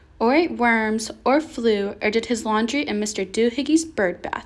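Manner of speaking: ordinary delivery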